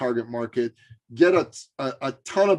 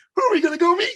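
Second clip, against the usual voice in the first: put-on eager, excited small child voice, very high; 5 dB louder than usual. Retelling a mother's story of her little son asking her a question: imitating an excited little boy. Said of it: "all excited".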